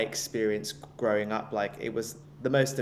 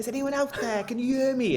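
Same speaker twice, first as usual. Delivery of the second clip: put-on Welsh accent, much higher pitched; 13 semitones higher, 7 dB louder than usual. Quoting a famous movie scene to the others, in a Welsh accent. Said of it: "that's a Welsh accent".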